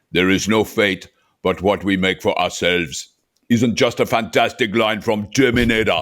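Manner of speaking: bad, fumbling put-on Austrian accent. Reading a line from Terminator in a Schwarzenegger Austrian accent. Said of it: "my very bad Schwarzenegger impersonation".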